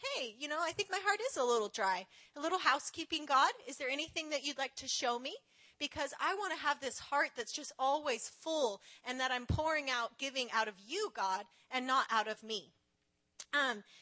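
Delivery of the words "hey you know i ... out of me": ordinary talk, nothing marked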